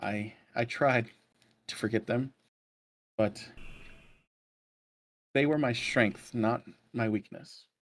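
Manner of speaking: soft, quiet voice cracking and breaking with sorrow. Narrator voices a character gazing where his lost circle once stood: quiet, breaking voice. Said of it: "In a quiet, breaking voice".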